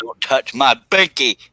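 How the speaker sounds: loud, flustered shouted outburst. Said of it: "Sorry for yelling".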